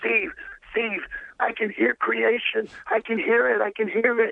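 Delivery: very high, thrilled, excited exclaiming. Retelling a friend's phone call after hearing creation: imitating an excited caller. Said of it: "he's so excited".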